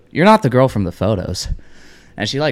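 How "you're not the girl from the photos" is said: usual speaking voice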